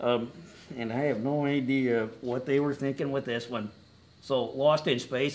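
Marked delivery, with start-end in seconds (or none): 4.4-5.4 strong stress on lost, said slowly. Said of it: "emphasis on lost".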